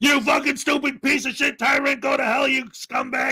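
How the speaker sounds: half-shouted swearing rant, mild yelling. Acting out someone who claims a medical condition as an excuse, imitating someone screaming and swearing. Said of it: "I'm always screaming and yelling and swearing".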